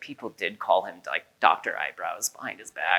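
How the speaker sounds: very low, hushed, secretive murmur. Retelling how the speaker's mom finally admitted something on Mother's Day, in a hushed voice. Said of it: "in a sort of hushed voice".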